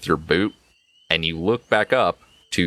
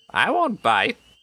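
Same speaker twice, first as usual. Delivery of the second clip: put-on very high, sweet, kindly old grandma voice; 14 semitones higher than usual. The game narrator voices a grandma character speaking to the players: kindly old grandma voice. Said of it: "a kindly old grandma ... and she goes".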